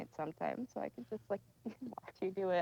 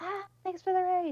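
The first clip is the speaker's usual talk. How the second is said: put-on very high, eager, excited yell; 12 semitones higher, 7 dB louder than usual. A streamer acts out thanking raiders when she can talk loud, retelling an excited shout. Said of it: "I want to like scream".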